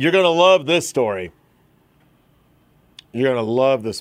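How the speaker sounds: facetious, playfully insincere, tongue-in-cheek tone. The host introduces the next story to listeners; facetious tone. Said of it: "the little bit of facetiousness in my voice".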